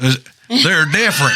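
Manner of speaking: acted good ol' boy accent and voice. Replaying a remark from a story, asked to do it again, in a good ol' boy voice. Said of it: "Let me hear it again".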